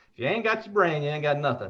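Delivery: put-on southern Louisiana accent. Asked by a caller about the accent, repeating a saying in a Louisiana accent. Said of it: "That Louisiana accent".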